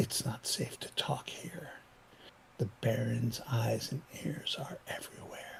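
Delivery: conspiratorial, breathy whisper. Voicing a character who glances at strangers nearby: lowered voice. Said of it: "then lowers his voice and says".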